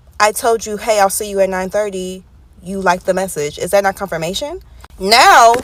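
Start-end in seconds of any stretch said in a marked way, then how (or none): none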